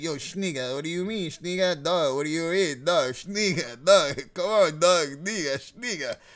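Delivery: put-on slangy bro character voice. Retelling talking in character with a friend: put-on schniga voice. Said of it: "we'll get trapped into character".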